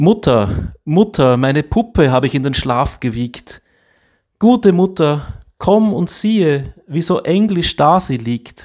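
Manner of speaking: put-on high, pleading, childlike little-girl voice.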